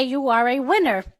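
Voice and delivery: soft, low American accent. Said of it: "or in American, we say".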